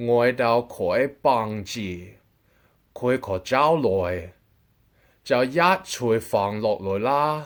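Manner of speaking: slow, deliberate, carefully clear, spelled-out words. Repeating what a woman said to explain its meaning, slow and clear. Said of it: "I'm going to say it slowly and clearly".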